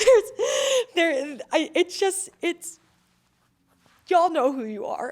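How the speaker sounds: moved, feeling rising up, voice lifting high. Speaker thanks the friends who supported them through it, getting emotional. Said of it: "I'm getting emotional".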